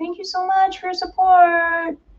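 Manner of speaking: put-on sweet, girly, very high streamer voice. Speaker imitates a girl Twitch streamer after someone subscribes, girl Twitch streamer impression. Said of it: "Impression of a Twitch streamer".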